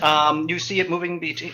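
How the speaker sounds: plain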